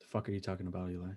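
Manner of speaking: very soft, low-toned, hushed murmur. Retelling a scene, voicing the gunny's angry reply in a low-toned voice. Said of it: "such a low tone voice".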